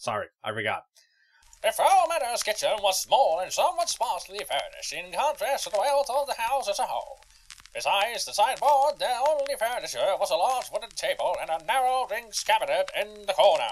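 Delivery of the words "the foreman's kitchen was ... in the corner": put-on old-timey storybook narrator voice, pitched up. Reading a passage aloud, restarting it in an old-timey narrator voice. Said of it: "Ye old-timey narrator voice".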